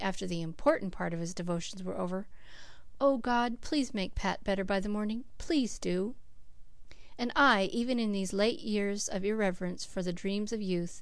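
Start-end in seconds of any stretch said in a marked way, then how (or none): 3.0-6.1 pleading, muttered loud whisper. Narrator reads a man's prayer said after his devotions, pleading loud whisper. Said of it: "mutter pleadingly".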